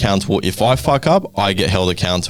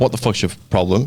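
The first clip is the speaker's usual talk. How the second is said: ordinary talk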